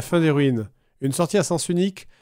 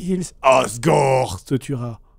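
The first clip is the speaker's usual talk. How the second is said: put-on demonic voice, much slower; 3 semitones lower than usual. Repeating what she said in the game, in a demonic voice. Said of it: "une voix démoniaque qui est sortie".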